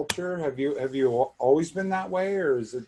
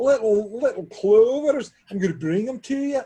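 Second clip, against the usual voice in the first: put-on Scottish accent, very high and loud; 9 semitones higher, 6 dB louder than usual. Joking about bringing cookies to a listener's door; fake Scottish accent. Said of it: "Oh, that's Scottish".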